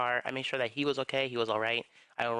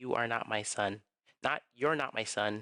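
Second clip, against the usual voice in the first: hard, severe, firm and stern voice. Recounting what his dad said close to his ear, imitating a stern voice. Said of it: "a very firm, stern voice".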